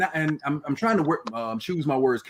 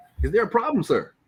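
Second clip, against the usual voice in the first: polite put-on business voice, much higher; 6 semitones higher than usual. Retelling speaking to an officer who gets behind you, in a put-on business voice. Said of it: "that officer get behind you".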